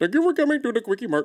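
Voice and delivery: terrible put-on Indian accent. After saying they can't do the accent, trying anyway: bad Apu impression. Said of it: "that is worse".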